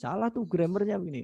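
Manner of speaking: high-pitched, nagging tone.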